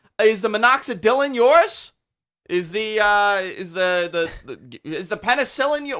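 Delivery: loud, slow, high-pitched yell. Retelling a pharmacist calling out a name: imitating a pharmacist yelling. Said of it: "And she's yelling".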